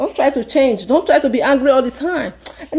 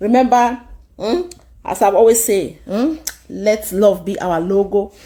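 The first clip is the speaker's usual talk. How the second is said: ordinary talk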